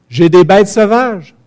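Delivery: menacing, high-pitched, loud, slow voice.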